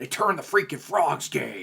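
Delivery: belted high-pitched yell. Answering a request from the chat to do an Alex Jones impression. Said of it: "do Alex Jones".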